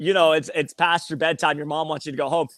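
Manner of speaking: ordinary talk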